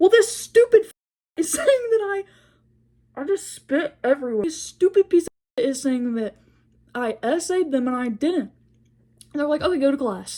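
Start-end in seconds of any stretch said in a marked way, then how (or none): 0.0-5.6 acted, furious, indignant, heated mild yelling. Retelling answering the principal and teachers about a boy: retelling angry screaming. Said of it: "I'm like screaming in his face".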